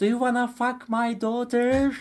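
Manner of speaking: put-on yelling. Retelling shouting to a handsome guy after a concert: retelling own past shout. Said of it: "I was shouting to the handsome guy".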